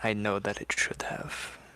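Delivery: whispered, hushed. Voicing a character answering a mysterious voice: whispering back. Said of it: "Raz is going to whisper back".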